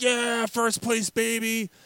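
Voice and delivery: high, slow, gloating cheer. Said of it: "he's like".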